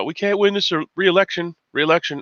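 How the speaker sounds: high, stammering put-on impression voice.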